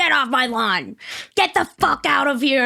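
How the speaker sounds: full-on yelling. Retelling yelling at people from the front yard: imitating own yelling. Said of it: "I start yelling at them".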